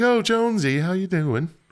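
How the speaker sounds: flirty, high, sweet, sing-song lilt. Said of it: "She's like".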